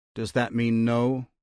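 ordinary delivery

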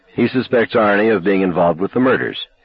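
ordinary delivery

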